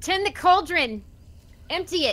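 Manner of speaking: loud, high-pitched yelling.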